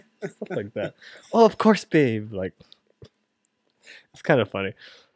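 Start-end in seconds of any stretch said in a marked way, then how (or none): 1.3-2.3 loud, showy, flamboyant host voice. Telling about the restaurant's host and how he talked: imitating a flamboyant waiter. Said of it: "We had a flamboyant host".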